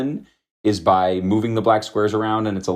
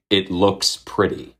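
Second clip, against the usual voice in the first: mock dry, flat, expressionless deadpan delivery. Speaker quotes a New York Times editor explaining her design rule: retelling in a deadpan voice. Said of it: "I just imagine her saying this in a deadpan voice".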